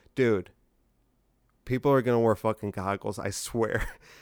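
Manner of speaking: ordinary delivery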